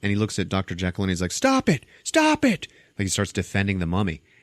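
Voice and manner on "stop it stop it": mock frantic, freaked-out, very high, drawn-out cry. Retelling a movie scene where a character freaks out: imitating someone freaking out. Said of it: "And Tom starts freaking out".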